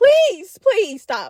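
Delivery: acted, high-pitched, desperate begging voice. Speaker retells a man begging a woman to stop, retelling desperate pleading. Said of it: "desperately trying to get her to stop".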